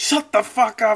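very high, shrill, drawn-out, fed-up angry screaming. Retelling a girl screaming at the other tent, imitating someone screaming. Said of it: "so she was just screaming".

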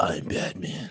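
hushed, whispered superhero voice. Mocking people who dress up in a bat suit, the speaker does a Batman voice. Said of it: "walking around talking like this".

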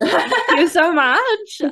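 very high, tearful voice, crying through the words. Thanking the other speaker for kind words, crying while talking. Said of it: "I'm crying again".

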